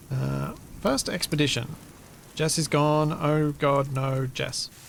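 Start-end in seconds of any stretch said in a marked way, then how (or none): 2.3-4.7 level, flat deadpan monotone, very slow and drawn out. Reading out a game message about a lost companion: deadpan reading. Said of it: "Could I have read that more deadpan?".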